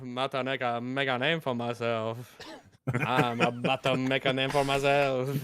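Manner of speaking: fake French-accented voice. Repeating a line in turns with others, in a French accent. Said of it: "That is the second best French accent I've heard today".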